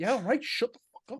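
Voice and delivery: soft, fed-up mutter with gradually growing annoyance. Retelling a film character growing tired of a cheering crowd: imitating annoyed character. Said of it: "he just gradual annoyance".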